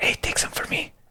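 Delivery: soft whisper under the breath, barely voiced. A player's character speaks to another character, in a whisper. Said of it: "I'll just whisper to him".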